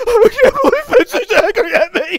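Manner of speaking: fake sobbing. Acting out a later scene on the joke: mock crying. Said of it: "I start crying".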